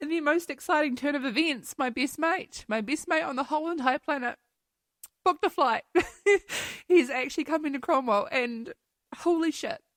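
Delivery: high, tearful speech through tears. Sharing exciting news about a best mate with listeners, crying while talking. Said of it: "I'm actually like crying".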